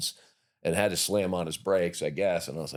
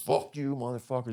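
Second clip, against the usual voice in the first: mock combative shout, high and aggressive; 5 semitones higher than usual. Retelling a bar fight, quoting a big man: imitating a man yelling. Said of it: "He's yelling at everybody in the place".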